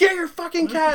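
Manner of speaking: very high, shrill, loud screaming. Retelling the mom's reaction to the cat's early-morning mess: imitating mom screaming. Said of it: "my mom's screaming".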